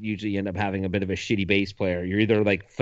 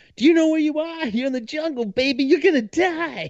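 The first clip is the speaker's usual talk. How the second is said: put-on very high, wild hollered outburst; 3 dB louder than usual. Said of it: "He just yells".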